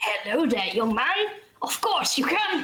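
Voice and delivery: put-on elderly man character voice. Voicing an elderly man on a bench greeting a young man, elderly man character voice. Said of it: "approach a little bit of an elderly fellow just sitting there on a bench, / approach a little bit of an elderly fellow just sitting there on a bench, just watching the people come by, excuse me. great".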